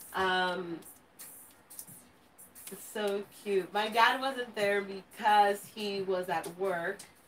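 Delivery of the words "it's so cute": ordinary talk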